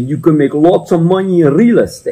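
put-on heavy, thick, strong European accent. Retelling what a man standing up at a crowded presentation said: strong European accent. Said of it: "with a very strong European accent".

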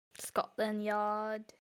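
very soft, shoddy fake Irish accent. Chatting with friends about Americans and British places, joking in a shitty put-on accent. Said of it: "That shitty accent".

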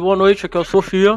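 put-on mumbling, mouth half closed, as if holding something. Re-enacting an earlier greeting said with a cigarette in the mouth: re-enacting talking with cigarette in mouth. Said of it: "eu tava com um cigarro na boca".

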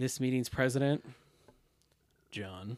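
dripping with contempt, heavy disdain. Redoing an introduction at a meeting, saying it with more disdain. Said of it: "Let me do it with some more disdain in my voice".

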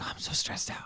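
put-on soft, breathy, stressed-out whiny kid voice.

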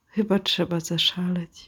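thoroughly downcast, mournful, sad delivery. Retelling what an office clerk said while copying a document: imitating a sad tone. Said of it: "mówi tak zupełnie smutnym takim tonem".

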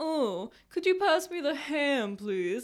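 slow, lofty, pompous, overly posh royal drawl. Recalling family dinners, the speaker acts out how they talked, putting on a pompous royal voice. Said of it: "we would talk like this".

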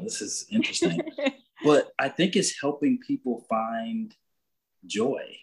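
moved, emotional delivery with a swooping voice. Speaker talking about their purpose in life, getting emotional. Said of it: "I don't know why I'm getting emotional".

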